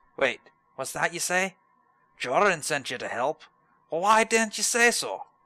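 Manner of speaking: loud, high-pitched bad put-on Scottish accent. Voicing a character's lines after commenting on it, in a bad Irish-Scottish accent. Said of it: "That's my bad Irish Scottish accent".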